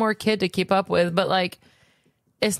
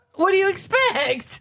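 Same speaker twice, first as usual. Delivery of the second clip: high-pitched, aggressive, exasperated rant. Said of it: "I'm sorry if that seemed aggressive".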